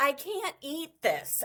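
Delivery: play-acted, all-upset, put-out voice. Acting out a woman whose man brings her a donut: imitating an upset woman. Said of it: "they're all upset".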